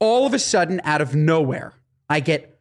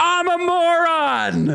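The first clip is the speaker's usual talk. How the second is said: very high shriek, moron stretched out; 12 semitones higher than usual. Retelling what a girl shouted after rolling down her window: imitating someone screaming. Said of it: "and she screams".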